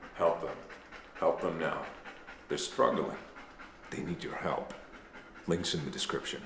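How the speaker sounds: grave, deathly serious, hushed whisper. Urging viewers to help a channel in a joke plug, mock deathly serious tone. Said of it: "(deathly serious tone)".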